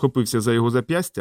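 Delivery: ordinary delivery, nothing marked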